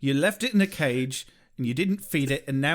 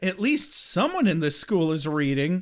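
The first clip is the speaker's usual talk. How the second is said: ordinary delivery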